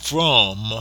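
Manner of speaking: emphasis on "from". Speaker quoting the angel's words to Joseph, stressing the word 'from'. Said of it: "I'll emphasize the word "from,"".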